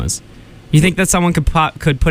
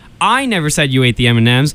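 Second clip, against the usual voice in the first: strong stress on the word I. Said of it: "put the emphasis on any different word".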